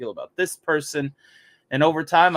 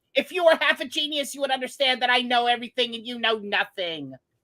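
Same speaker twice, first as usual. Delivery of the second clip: put-on cartoon villain voice, pitched higher; 9 semitones higher than usual. Showing another speaker his Mandark voice. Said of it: "if you want my Mandark".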